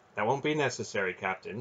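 ordinary delivery

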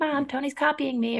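very high-pitched little dog voice. Voicing the dog complaining to Mom: Pepe's high-pitched dog voice. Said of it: "he says that in his voice".

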